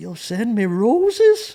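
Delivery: put-on gentle elderly man voice. Retelling what a woman's husband said when he got on; sweet old man voice. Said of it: "has that sweet old man voice".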